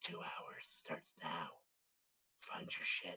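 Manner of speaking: barely audible, very quiet, breathy hushed whisper. Without a single sound made, the party hears a voice whispering. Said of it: "you just hear the like the whisper".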